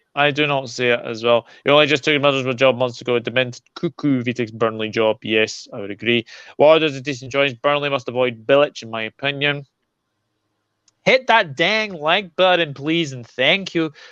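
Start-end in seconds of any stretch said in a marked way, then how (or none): 11.1-13.9 bad, fake, horrible put-on American accent. After football talk, the speaker turns to the audience in a bad American accent. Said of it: "That was a horrible American accent".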